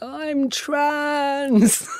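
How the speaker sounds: very high-pitched, tearful, words pushed through tears. Recounting a past coming-out moment, retelling a tearful line. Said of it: "looked up with these tears and I was like".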